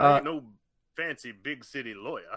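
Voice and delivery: very loud, bellowing cartoon rooster voice. Discussing a cartoon character's old lines, the speaker does a Foghorn Leghorn impression. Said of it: "Foghorn Leghorn. I say".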